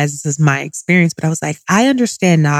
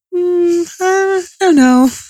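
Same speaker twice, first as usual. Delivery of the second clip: put-on sweet voice, very high and very slow. Retelling the doula's reply during labor: imitating Arlen's sweet voice. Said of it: "she has a very sweet voice".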